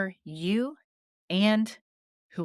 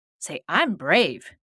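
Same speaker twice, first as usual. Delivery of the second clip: louder, slower and firm. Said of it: "I want you to say it louder".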